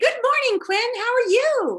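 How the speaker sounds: very high-pitched, loud, cheerful voice. Speaker retells greeting a fifteen-year-old at breakfast each morning: retelling a cheerful greeting. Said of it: "So I'd always cheerfully say".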